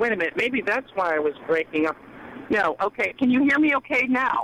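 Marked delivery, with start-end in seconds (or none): 3.2-4.5 loud, high-pitched shouting. Caller on speakerphone checking the host can hear, shouting into the phone. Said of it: "you don't have to shout".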